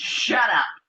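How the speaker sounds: exasperated, fed-up outburst. Showing how adults talk to a child, imitating a fed-up adult. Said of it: "And then you get fed up with 'em".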